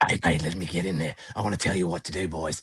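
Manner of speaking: abrupt, barging-in, interrupting delivery. Picturing a joint manager bursting in: imitating Ange. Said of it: "Ange is going like".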